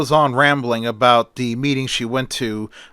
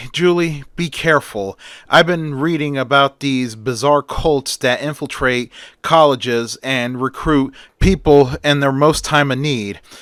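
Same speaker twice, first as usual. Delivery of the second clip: usual speaking voice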